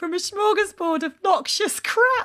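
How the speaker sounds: laughing while speaking. Reading a listener's letter aloud, laughing while reading. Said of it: "I've got it crying".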